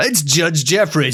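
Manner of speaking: high, hyped wrestling ring announcer voice. Joking that a judge sounds like a wrestler: WWE wrestling announcer voice. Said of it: "He sounds like a W W E wrestler".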